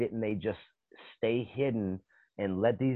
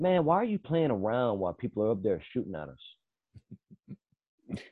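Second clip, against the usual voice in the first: put-on offhand, unbothered, casual matter-of-fact delivery. Retelling a movie character's line: imitating a matter-of-fact delivery.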